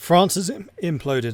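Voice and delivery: voice cracking and breaking up mid-phrase. Narrating after a long stretch of not talking, voice cracking. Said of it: "my voice is cracking".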